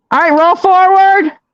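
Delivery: high-pitched yelling at full volume. Guiding someone to roll back and then forward: yelling directions. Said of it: "I'm yelling in you guys' ears".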